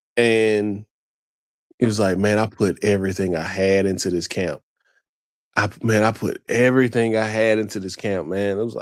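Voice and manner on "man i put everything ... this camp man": pained voice, on the edge of tears. Retelling a fighter's words after he weighed in: imitating Ammo Williams near tears. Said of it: "was almost in tears".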